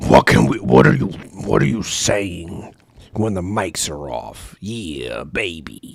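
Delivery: very low, weird, unsettling, creepy voice. Acting out people curious about what the hosts say, in a weird, creepy voice. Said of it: "Why do you do that weird, creepy voice?".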